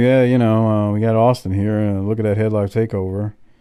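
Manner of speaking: put-on dull, droning, low, flat monotone. Imitating a man the speaker calls very monotone: mock flat monotone. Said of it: "He's very monotone".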